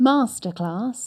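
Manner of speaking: Received Pronunciation accent. Asked to say the word in Received Pronunciation. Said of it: "now when you're talking R P, do it".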